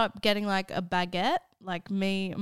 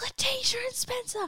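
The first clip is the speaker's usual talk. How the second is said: put-on frantic voice, higher; 3 dB quieter than usual. Retelling a teacher catching students parked out front: imitating a teacher losing her mind. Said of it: "just losing her mind".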